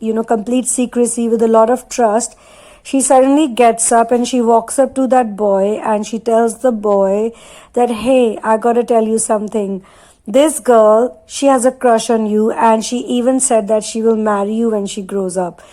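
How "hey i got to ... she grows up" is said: normal talking voice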